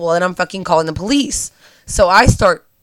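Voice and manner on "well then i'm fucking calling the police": usual speaking voice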